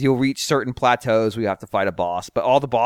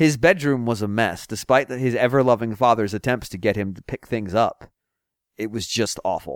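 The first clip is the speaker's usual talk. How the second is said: ordinary delivery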